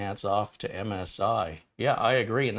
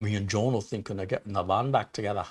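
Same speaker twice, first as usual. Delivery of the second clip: terrible, bad fake Liverpool accent. Host reading out a viewer's hello message, bad Liverpool accent as Mark Cresswell. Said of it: "That's a terrible accent".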